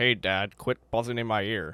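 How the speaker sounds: put-on Canadian-sounding heroic voice. Mocking how the show's voice actor does Wolverine: imitating the bad Wolverine voice. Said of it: "That was actually the voice".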